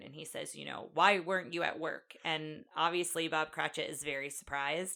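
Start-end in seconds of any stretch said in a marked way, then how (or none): 0.9-2.1 put-on stern voice. Retelling how Scrooge knocks on the door: imitating Scrooge being stern. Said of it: "he's very stern".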